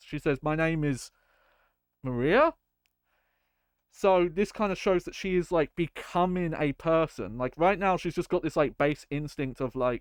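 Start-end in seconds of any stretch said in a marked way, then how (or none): 0.4-2.5 put-on, almost surprised, half-surprised tone. Retelling how a character suddenly recalls her name: imitating an almost surprised tone. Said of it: "she says it almost surprised".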